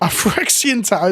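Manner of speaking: dry, sarcastic-sounding tone. Commenting on an opponent's play during a game of Magic: sounding sarcastic. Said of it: "That sounds so sarcastic".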